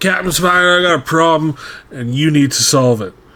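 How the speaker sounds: haughty, self-important, pompous voice. Voicing a character stepping up to the undead pirates: pompous captain voice. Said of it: "the pompous air of a captain".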